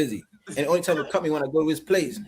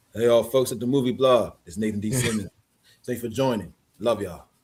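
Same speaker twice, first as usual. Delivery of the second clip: lowered voice reset into a deep register; 4 semitones lower than usual. Recording a greeting to the folks at the movie blog, in a lowered voice. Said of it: "I gotta put it look put it lower".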